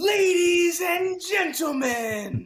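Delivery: stage announcer voice. Jumping on stage to announce the performance: in-character stage announcer. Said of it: "jumps on stage and she's like".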